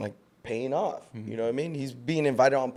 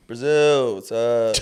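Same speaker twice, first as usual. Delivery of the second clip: loud, level, droning flat deadpan monotone; 6 dB louder than usual. Imitating a cousin who travels the world: monotone imitation of Daniel. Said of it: "He's so monotone".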